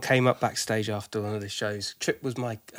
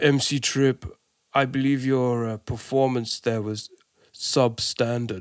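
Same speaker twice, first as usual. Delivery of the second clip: dry, deadpan, droll put-on Austrian accent; 4 dB louder than usual. Retelling what a man said to him around a trip to Austria, in a droll Austrian accent. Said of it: "in his really droll kind of Austra- Austrian accent goes".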